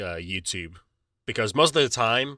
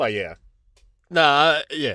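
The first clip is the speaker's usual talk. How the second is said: ordinary talk, nothing marked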